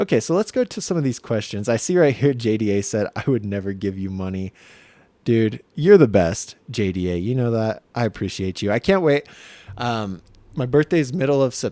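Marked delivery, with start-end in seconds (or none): 10.6-11.7 voice cracking and breaking. Answering a commenter's question, voice cracking. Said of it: "my voice cracked".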